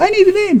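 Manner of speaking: very high, squeaky voice. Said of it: "she said".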